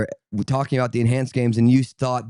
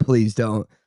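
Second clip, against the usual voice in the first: put-on concerned, pleading tone. Retelling his words to the others, imitating a concerned voice. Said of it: "the concern in his voice".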